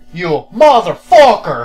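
sudden, very loud blurted outburst. Quoting another line from The Room: imitating Tommy Wiseau's sudden outburst. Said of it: "It just comes out of fucking nowhere".

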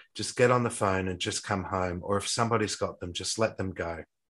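ordinary talk, nothing marked

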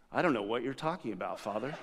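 play-acted deadpan, very low and quiet. Retelling a young lady's answer when the speaker confronts her, imitating a straight face. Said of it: "She was just like straight-faced".

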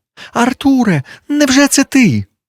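very high, breathless, gasping cry of surprise. A narrator reads a woman at a café table calling to Arthur, gasping. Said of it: "задихаючись, вигукнула вона".

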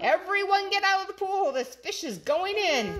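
high-pitched yell. A fireman arrives at the pool and yells to everyone in it; yelling. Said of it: "The fireman yelled".

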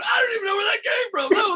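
very high shout through laughter. Retelling own remark after a room's reaction, laughing while talking. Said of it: "I'm cracking up laughing, going".

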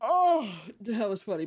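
words half swallowed by yawn. Reacting to something funny, talking through a yawn. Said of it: "I had to yawn".

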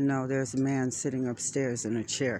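ordinary talk

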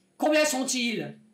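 enraged voice. Narrator reads a man questioning Gringo, in an angry voice. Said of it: "dit-il d'une voix rageuse".

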